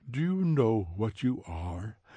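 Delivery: understated, probing, searching tone with no push. Recalling tea with Aldous Huxley as he leans forward: Aldous Huxley's very quiet voice. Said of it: "in his very quiet voice".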